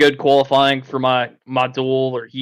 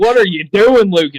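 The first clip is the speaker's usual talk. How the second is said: loud, high-pitched scream; 7 semitones higher, 5 dB louder than usual. Imagining a replay of the race: imitating Jake screaming. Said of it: "I'm gonna have Jake screaming at me".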